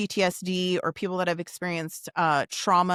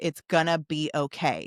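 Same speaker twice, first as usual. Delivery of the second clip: put-on stern reassuring tone; 3 semitones lower than usual. Retelling comforting a frightened son after a trauma: imitating own stern tone. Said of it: "almost, like, stern".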